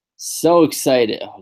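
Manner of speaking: mock enthusiasm, heavy sarcasm. Answering about a tag team battle royal with sarcastic fake excitement. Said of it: "can you sense the sarcasm?".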